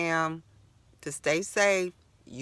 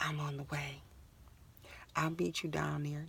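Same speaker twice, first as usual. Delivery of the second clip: very soft, hushed, smooth sexy voice; 11 dB quieter than usual. Retelling a man's phone call on the bus: imitating a sexy voice. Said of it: "that nice little sexy voice".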